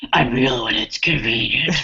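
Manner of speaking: fake, very low, brooding vigilante voice, deliberately bad. Recounting a film scene, answering Cyborg in a bad Batman voice. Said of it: "his Batman voice".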